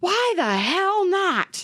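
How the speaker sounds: very high, slow, drawn-out screeching scream. Reading a caller's story aloud, imitating a caller screaming. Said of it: "And he screams".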